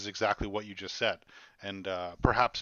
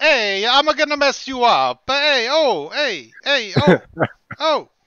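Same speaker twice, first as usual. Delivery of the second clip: very loud, drawn-out put-on Italian accent, tough-guy voice; 16 dB louder than usual. Joking about what a phrase means: imitating an Italian tough guy. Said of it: "it's when an Italian goes".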